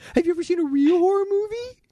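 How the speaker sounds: squeaky, very high, teasing, mocking jeer. Showing how Jason will be mocked at the horror fest: mocking taunt. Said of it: "I'm gonna just mock you the whole time".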